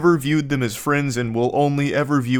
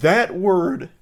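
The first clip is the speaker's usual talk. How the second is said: sudden big voice crack on the word; 4 semitones higher than usual. Reacting to a clip, the speaker's voice cracks on one word: big voice crack. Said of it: "I had a big voice crack there".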